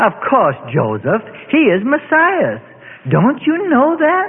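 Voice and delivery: condescending, high-pitched, sing-song tone. An older sister turns to her younger brother, condescendingly. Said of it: "condescendingly intones".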